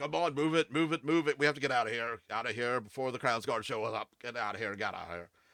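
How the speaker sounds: loud, large brutish orc voice. Game master voicing a large orc in a tabletop scene: large orc voice. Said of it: "a large orc. He's like".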